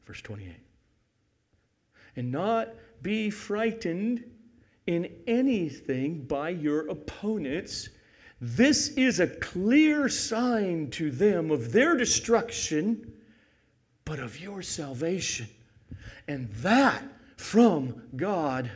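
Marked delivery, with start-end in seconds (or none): 2.2-18.7 slow, deliberate reading. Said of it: "Let me read it slowly".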